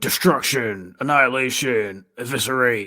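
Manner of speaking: over-the-top eighties promo announcer-style voice. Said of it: "his little nineteen eighties promo where he was like".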